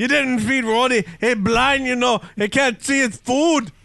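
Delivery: deliberately terrible put-on Scottish accent. Joking around mid-conversation on the show, the speaker puts on a bad Scottish accent. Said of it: "the worst Scottish accent I've ever heard".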